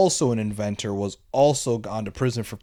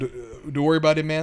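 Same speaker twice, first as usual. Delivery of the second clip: put-on snide, mocking, taunting, pitched-up tone; 6 semitones higher than usual. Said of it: "he's mocking him".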